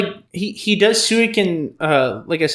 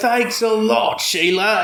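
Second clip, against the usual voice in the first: overdone, forced put-on Australian accent, slow; 4 semitones higher than usual. Quoting a drunken Aussie character's line, imitating a forced Australian accent. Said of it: "and he has that accent".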